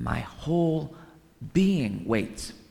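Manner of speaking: whole stressed, pushed up high in pitch. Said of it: "I emphasize that word whole being".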